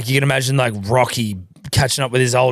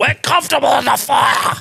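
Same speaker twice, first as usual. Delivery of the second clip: very high, shrill, rough, fully hyped squealing yell; 12 semitones higher than usual. Imitating a cornerman firing up a boxer: imitating Teddy Atlas yelling. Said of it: "Jesus Christ, Teddy Atlas, relax".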